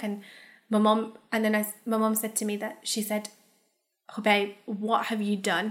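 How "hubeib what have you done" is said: mock-stern, scolding tone. Retelling the mum confronting her son with authorities at the house, imitating a stern mother. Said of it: "Quite sternly, as a mother would".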